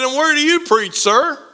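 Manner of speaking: chipper, cheery, sunny, friendly clerk voice. Telling a story, quoting a store clerk asking a customer, imitating a cheery clerk. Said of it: "with her cheery voice said".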